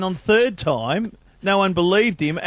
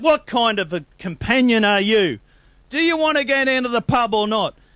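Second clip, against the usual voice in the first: exasperated, disappointed, frustrated loud yell; 3 semitones higher than usual. Telling a joke, the man loses patience with the centipede: disappointed yelling. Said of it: "The man is very disappointed, and he yells out".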